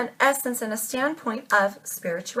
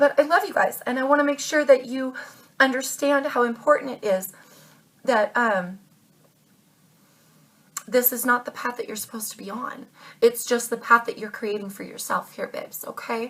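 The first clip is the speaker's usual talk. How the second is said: choked-up, tearful crying speech, voice breaking. Speaking to Aquarius listeners before letting them go, crying. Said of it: "I'm crying".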